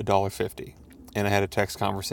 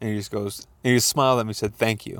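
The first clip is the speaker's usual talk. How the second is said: plain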